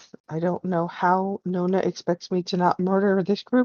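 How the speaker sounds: hushed, grumbling mumble under the breath. Voicing a character walking away from the group: muttering under his breath. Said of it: "You will hear him mutter under his breath".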